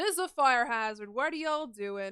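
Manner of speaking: really loud scolding tone. Describing turning on the lights among candles, acting out being really loud. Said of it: "you're really loudly being like".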